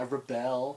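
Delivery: mocking emo teenage girl voice and attitude. Retelling how a trailer character said a line: imitating an emo teenage girl. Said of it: "the way she said it was like that emo teenage girl".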